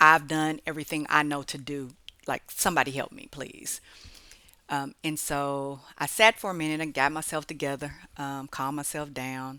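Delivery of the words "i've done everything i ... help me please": desperate, exasperated, end-of-rope cry. Retelling a moment stuck on the road, imitating an exasperated cry for help. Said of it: "cry out for an intervention".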